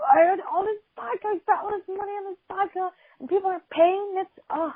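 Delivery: mock very high-pitched, angry, ranting yell. Retelling how a man yelled about the missing vodka: imitating someone yelling. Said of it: "he's yelling at anyone that looks at him".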